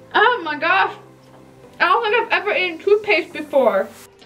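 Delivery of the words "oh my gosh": startled, weirded-out cry. Eating toothpaste on camera in a messy bathroom, yelling.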